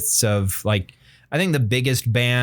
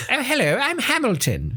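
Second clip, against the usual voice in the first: very high, foppish, put-on seventeenth-century dandy voice; 13 semitones higher than usual. Picturing someone named Hamilton as a seventeenth century dandy: dandy voice. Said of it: "a seventeenth century dandy".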